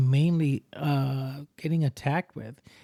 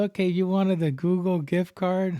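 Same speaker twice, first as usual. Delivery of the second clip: sudden switch to put-on lady's voice; 4 semitones higher than usual. Retelling how someone disguises his voice when talking to a hacker: imitating a lady's voice. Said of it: "change his voice and change it to a lady".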